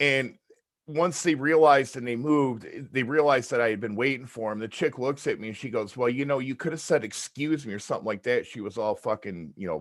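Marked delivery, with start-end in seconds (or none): 6.0-8.5 mock bitchy, put-out, belligerent, snippy delivery. Retelling what a woman in a store said: imitating a belligerent, bitchy woman. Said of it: "belligerent and bitchy about it".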